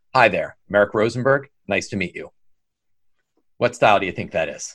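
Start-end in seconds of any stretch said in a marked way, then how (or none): 0.1-2.3 matter-of-fact, direct, with no feeling. Demonstrating a personality style by introducing yourself to the audience, direct and non-emotional. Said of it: "And non-emotional".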